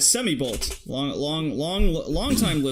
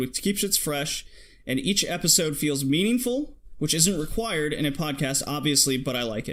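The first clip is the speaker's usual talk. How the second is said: ordinary talk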